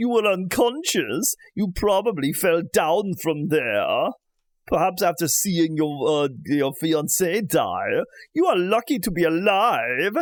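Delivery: creature of the night voice. The narrator voices a character speaking to someone who just woke up: vampire voice. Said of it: "I have vampire voice".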